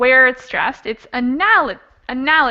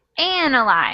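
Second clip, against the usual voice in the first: analyze with stress on first syllable AN. Teacher correcting a student's answer: stress on first syllable of analyze. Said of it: "the stress is on the first syllable".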